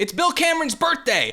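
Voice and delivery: mock very high-pitched, shrill yell. Acting out a boss calling to the secretary: imitating a boss yelling. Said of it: "yells to the secretary".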